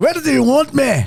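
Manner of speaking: high, slow, bad Scottish accent. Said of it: "Sorry, that was bad".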